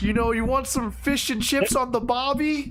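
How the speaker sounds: poor put-on British accent. Trying an accent after saying they can't do British: bad British accent. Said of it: "I can't do an accent for the British".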